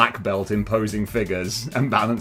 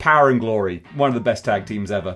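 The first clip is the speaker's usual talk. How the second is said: plain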